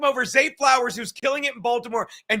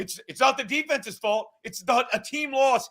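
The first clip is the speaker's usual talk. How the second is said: ordinary talk, nothing marked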